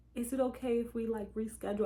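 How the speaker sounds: put-on crying, acted sobbing. Retelling what she said to a parent while breaking down, imitating her own crying. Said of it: "I'm crying".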